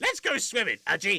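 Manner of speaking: put-on villain character voice. Retelling how a game character was voiced: Damon Gant voice. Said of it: "I gave him this kind of voice".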